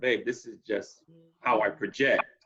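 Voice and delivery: ordinary talk, nothing marked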